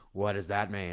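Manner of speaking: robotic voice-changer delivery. Retelling a film scene where Batman questions Superman: Batman's electronic voice. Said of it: "electronic voice".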